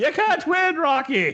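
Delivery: put-on very high-pitched Irish accent. Speaker acts out Adrian warning Rocky; Adrian in an Irish accent. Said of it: "I don't know why she's Irish and when I do her".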